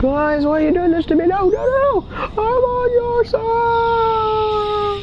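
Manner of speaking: mock villain voice, very high, shouted, pleading tone.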